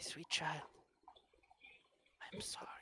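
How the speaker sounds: gentle, soft, breathy whispered voice. Narrator voicing a woman who pulls the listener close, in a soft voice. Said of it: "in a soft voice she goes".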